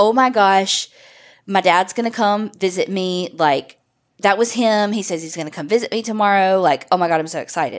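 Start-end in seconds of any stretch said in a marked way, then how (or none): none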